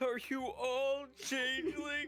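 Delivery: put-on panicked voice. Repeating another player's panicked question for laughs: imitating Gnark's panicked question. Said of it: "Gnark being like".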